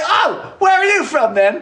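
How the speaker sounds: put-on British accent. Joking impression of Brits forgetting they imperialized places, put-on British accent. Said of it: "That's my impression of a British person".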